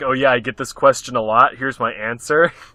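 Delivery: flat, deadpan, matter-of-fact businesslike tone. Showing how the joking answer was said: imitating a deadpan businesslike tone. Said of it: "in a very business sort of way".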